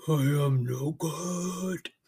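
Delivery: ridiculous deep voice, really low and very drawn out. Showing how to say a harsh thought aloud: really low voice. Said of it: "Or really low".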